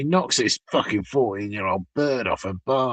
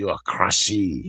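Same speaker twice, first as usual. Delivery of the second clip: fake French waiter-style accent, lower pitch; 2 semitones lower than usual. Joking about how a French waiter would pronounce a word: French waiter accent. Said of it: "That's how a French waiter would say it".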